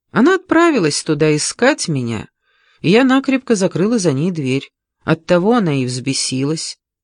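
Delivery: ordinary delivery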